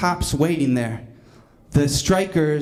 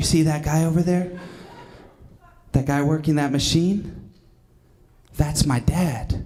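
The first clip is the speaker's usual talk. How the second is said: put-on acted elderly whisper. Retelling Bobby pointing out his dad at the machine, in an old-man whisper. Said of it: "he talks like an old man whispering".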